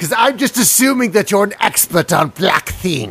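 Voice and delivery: acted swamp hag voice. Voicing a magic scroll figure giving a paladin a quest: J K Rowling as a bog hag. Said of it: "And she says".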